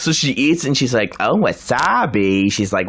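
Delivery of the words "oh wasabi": put-on nasal voice. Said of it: "the Fran Drescher voice".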